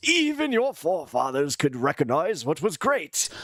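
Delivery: put-on English accent. Speaking as England to Americans: English accent mostly James Clyburn. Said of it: "a little English accent, but just mostly James Clyburn".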